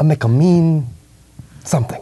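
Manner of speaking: high-pitched fake Spanish accent. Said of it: "he's like".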